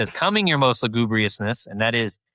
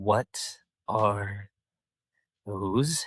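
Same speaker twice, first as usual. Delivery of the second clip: angry, fuming cartoon-villain voice; 2 semitones lower, 7 dB quieter than usual. Retelling a favorite angry scene at two sidekicks: imitating angry Hades. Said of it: "when Hades gets really angry at Pain and Panic".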